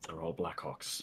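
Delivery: very soft, low, hushed half-whisper. In a role-play scene, answering back while others shout nearby, half-whispering. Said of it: "I'm just gonna like whisper back".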